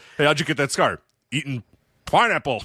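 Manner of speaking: bad dubbed-sounding delivery. Quoting a movie line from its TV version: imitating a horrible TV voiceover. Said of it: "With the horrible voiceover".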